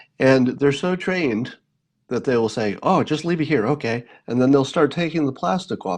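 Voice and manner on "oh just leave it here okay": well-drilled, agreeable, obliging hotel service staff voice. Retelling a hotel room service visit: imitating a room service deliverer. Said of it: "if I may do an impression of everybody".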